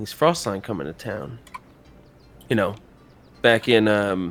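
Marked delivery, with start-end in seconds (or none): 0.0-1.4 voice dropped just a touch, slightly lowered and hushed. Telling a story, quoting a man who lowers his voice a little. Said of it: "lowers his voice a little bit".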